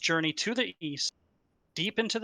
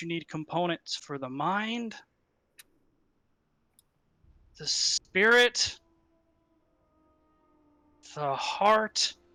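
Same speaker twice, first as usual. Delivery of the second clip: put-on elderly man voice. The high priest steps forward to speak in the ritual scene: old man voice. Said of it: "in his best uh, old man voice".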